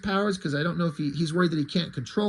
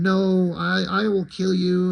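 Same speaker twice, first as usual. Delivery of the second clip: very slow, dragged-out, drawn-out yell. Retelling a scene where Threshold yells at them: imitating Threshold yelling. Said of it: "he's yelling at them".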